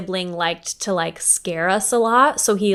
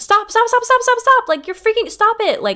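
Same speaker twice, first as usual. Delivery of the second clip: put-on scream, higher pitch; 4 dB louder than usual. Retelling seeing a shadow figure run toward them: imitating someone screaming.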